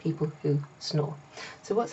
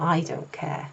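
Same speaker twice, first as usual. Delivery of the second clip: heavy stress on "I", rest said plainly. Showing how to put stress on the subject pronoun: stress on i. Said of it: "we would put like stress on the the subject pronoun I".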